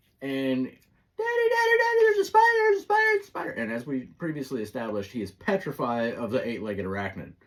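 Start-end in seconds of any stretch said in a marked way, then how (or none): 0.6-3.5 put-on, very high, shrill, loud panicked screeching. Retelling a shout from upstairs about a spider: imitating screeching like bloody murder. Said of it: "He was screeching like bloody murder".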